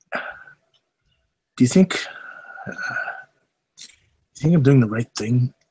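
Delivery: hushed whisper, voice dropped low. In character, speaking to a longtime servant, lowered voice. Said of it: "I kind of lower my voice".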